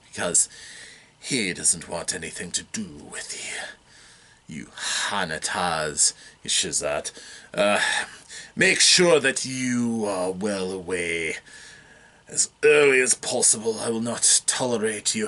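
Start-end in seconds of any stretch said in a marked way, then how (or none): 4.5-15.2 slow, deliberate, slightly deep noble voice, register low. Voicing Constable Ralph as he dismisses the players: slightly deep noble voice. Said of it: "a little bit of a noble voice there, perhaps. A little deep".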